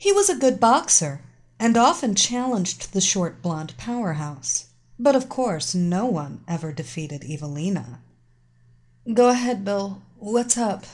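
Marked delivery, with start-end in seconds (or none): 9.1-10.8 drowsy, half-awake, sleepy voice. A woman answers a phone call from her boxing sparring partner: sleepy. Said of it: "She responded sleepily".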